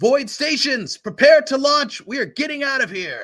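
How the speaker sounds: high, loud yell. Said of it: "she yells out to the crew".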